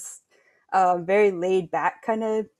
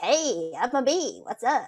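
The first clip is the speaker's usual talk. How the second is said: quirky, higher bee voice with California flavor; 3 semitones higher than usual. Voicing a bee character offering honey: higher bee voice with California flavor. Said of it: "a little California flavor in the higher voice".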